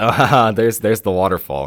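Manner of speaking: play-acted light, playful, joking, teasing tone. Retelling a drive when mom pointed at a tiny drop of water: imitating mom joking. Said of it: "my mom jokingly goes".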